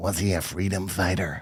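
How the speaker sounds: put-on very hushed, low voice with an American accent. Storyteller retells what one of the americans asked, quiet american voice. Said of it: "one of the Americans in a quiet voice went".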